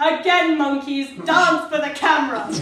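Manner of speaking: domineering, loud and slow voice. Showing how to order the cast to redo a shot: playing the bitch, ordering people. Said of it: "take the role of bitch like I do".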